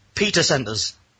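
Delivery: ordinary delivery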